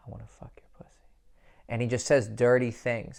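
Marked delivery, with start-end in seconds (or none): 0.1-0.9 tender, gentle, very soft, barely audible whisper. Speaker describes a man whispering in a woman's ear, retelling a gentle whisper. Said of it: "He whispers in her ear and he's like".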